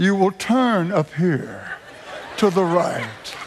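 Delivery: sultry, seductive female sat-nav voice. Joking about drivers following GPS directions, sultry GPS lady voice. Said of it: "that lady's sultry voice says".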